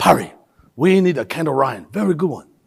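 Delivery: thick, heavy put-on Chinese accent. Retelling a mentor's request, imitating Robert's heavy Chinese accent. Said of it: "So I'll do Robert's accent".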